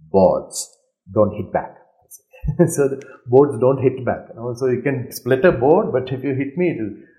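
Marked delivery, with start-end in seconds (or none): 0.1-1.7 put-on deep-pitched Chinese accent. Quote Bruce Lee answering a man who split a board, with his Chinese accent. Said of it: "with his Chinese accent".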